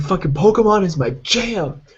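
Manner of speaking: mock angry ranting. Retelling a video of a man ranting about Pokemon: imitating an angry rant. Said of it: "goes on a giant rant".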